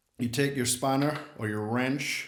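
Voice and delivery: clumsy, terrible put-on American accent. Explaining how to tune a conga drum, in a bad american accent. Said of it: "That was a terrible American accent".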